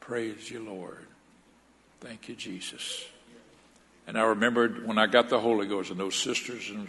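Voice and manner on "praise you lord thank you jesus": very soft whispered voice. Retelling a prayer at one's lowest point: imitating own past whisper. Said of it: "I could just whisper it".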